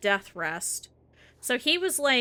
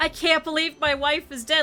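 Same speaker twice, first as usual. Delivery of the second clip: mock angry, aggrieved, grumbling tone; 7 semitones higher, 4 dB louder than usual. Recounting a man lying in the snow after his wife died, imitating him mad. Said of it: "he's all mad".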